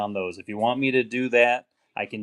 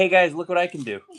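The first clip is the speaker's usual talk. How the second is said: high, small talking house-cat voice; 7 semitones higher than usual. Voicing the meowing cat Fancy in the background: voicing the cat Fancy. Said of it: "Fancy's like".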